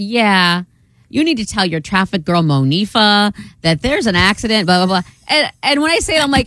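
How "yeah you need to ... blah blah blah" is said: woman's voice, as heard over a phone. Retelling what a caller said during the break; imitating a caller. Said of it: "I just have to imitate her".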